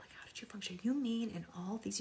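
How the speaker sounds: soft, breathless, mock amazed whisper.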